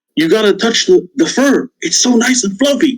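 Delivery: voiced stage half-whisper. In an actual-play game, the princess half-whispers in Iron's ear; Pretty Pretty Princess half-whispering. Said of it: "and the pretty pretty princess is like, / and the pretty pretty princess is like".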